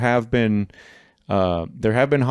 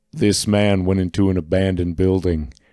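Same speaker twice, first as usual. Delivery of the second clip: put-on synthetic AI voice; 3 semitones lower than usual. Joking about making a creepy TikTok: fake AI Jesse Ventura voice. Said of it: "I'll do a fake A I voice, uh, of, like, Jesse Ventura".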